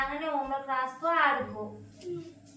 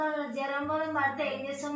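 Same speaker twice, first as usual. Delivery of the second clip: plain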